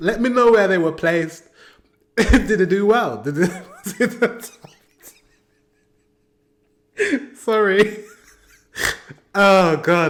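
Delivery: words broken up by giggles. Asking viewers where a performance placed in the ranking, giggling while talking. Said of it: "I've got the giggles now".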